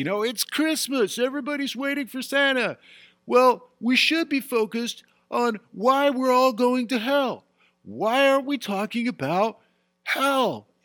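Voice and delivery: very high, full-lung, top-of-the-lungs shouting. Retelling what a man with a sign yelled at Christmas, imitating a man yelling. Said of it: "he's yelling at the top of his lungs".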